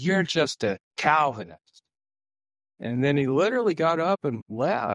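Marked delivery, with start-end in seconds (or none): 0.0-1.6 acted frustration, voice raised. Retelling what a man said when he got frustrated with the speaker: retelling a frustrated raised voice. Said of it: "he got frustrated with me and he kind of raised his voice".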